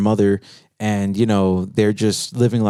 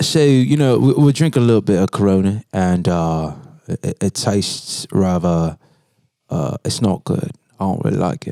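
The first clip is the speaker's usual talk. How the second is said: terrible put-on British accent. Asked by the other speaker to show it, doing a terrible british accent. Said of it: "let's hear it".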